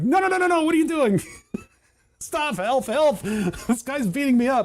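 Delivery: high, spooky, put-on ghost voice. Acting out a ghost being beaten up in a game idea: voicing a ghost. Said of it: "you just rip the ghost off of the wall, and it's like".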